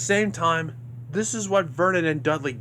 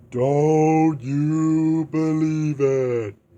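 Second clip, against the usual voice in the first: loud, ghostly deep voice, "you" drawn out; 5 dB louder than usual. Retelling a story, one character speaking to another: ghostly deep voice. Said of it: "says in that ghostly deep voice".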